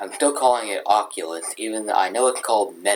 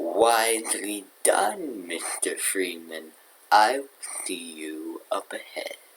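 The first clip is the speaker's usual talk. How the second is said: mysterious villain voice, much slower; 5 dB quieter than usual. Speaker quoting a game villain's final line, G-Man impression. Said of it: "G-Man's final line from Half-Life 1".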